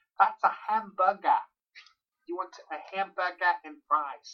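clumsy, badly faked put-on American accent. Speaker imitates British people failing at American accents, bad American accent. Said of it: "Sometimes British people can't".

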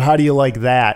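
ordinary delivery

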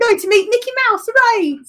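very high, exaggerated, badly done fake British accent. Retelling a childhood reply about moving to america: bad impersonation of a british person. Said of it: "a bad impersonation of somebody from the U K".

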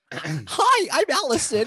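very high, horribly bad, sing-song voice. Opening the podcast by speaking as Allison: bad Allison impression. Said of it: "She's gonna hate my impression".

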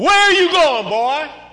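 big man's booming yell, very loud and high. Retelling a 280-pound man catching him jumping out a window: booming voice of Elmer. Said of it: "I heard the booming voice of Elmer".

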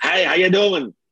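high, loud, belted grandmother caricature voice.

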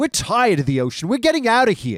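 comic, Yiddish-inflected accent.

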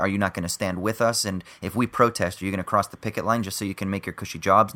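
ordinary delivery

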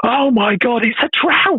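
acted, very high, slow, drawn-out exclaiming shout. Retelling a friend's reaction to a photo of a catch: imitating someone shouting. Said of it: "he just shouted".

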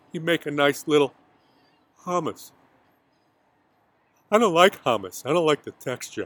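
put-on heavy breathing. Acting out what a man said, pause included, imitating heavy breathing. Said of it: "Heavy breathing".

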